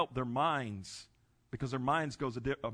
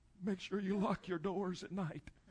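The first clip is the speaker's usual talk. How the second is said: put-on threatening mafia voice, higher pitched; 6 semitones higher, 5 dB quieter than usual. From a wheelchair, the speaker imagines warning a man, in a mafia voice. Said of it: "with a mafia voice".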